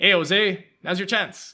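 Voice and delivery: put-on very loud, Irish-sounding lilting accent. Quoting the corner at the show's most intense moment, in an Irish-sounding accent. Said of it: "It sounds Irish when I'm repeating it".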